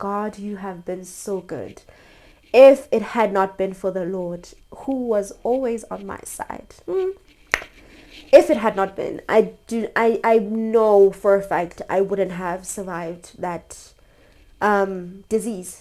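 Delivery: right on the edge of crying, holding back tears. Recalling surviving a deadly disease, the speaker thanks God while holding back tears. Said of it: "I'm actually still trying not to cry".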